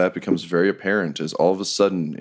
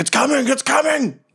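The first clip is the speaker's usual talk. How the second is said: urgent, very high-pitched yelled shout. Voicing people running toward the camp, yelling to each other: yelling a warning. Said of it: "running and yelling to each other".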